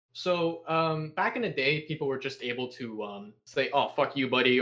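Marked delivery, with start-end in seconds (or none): none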